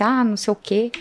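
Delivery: ordinary talk, nothing marked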